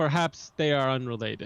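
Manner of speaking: completely unconvincing, not believable delivery. Gunder readies his spear and says aloud, in a completely unconvincing voice. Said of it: "in a completely unconvincing voice".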